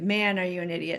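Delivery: ordinary talk, nothing marked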